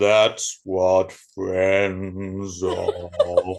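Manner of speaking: very deep, very slow, rumbling bass voice. Performing a line after the other speaker tries it, very deep voice. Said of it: "you managed to get deeper than me".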